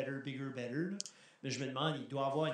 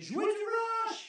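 mock, shrill, high, loud shout; 6 dB louder than usual. Recounting being in the crowd at a school concert, retelling a shout. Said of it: "je criais".

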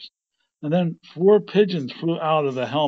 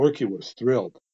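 plain

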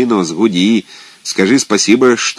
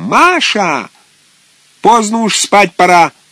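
squealing, shrill, very high-pitched, drawn-out shout; 10 semitones higher than usual. Kozyepupov, pacing the room, calls out to Masha with a shrill shout. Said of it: "вдруг крикнул Козьепупов визгливым голосом".

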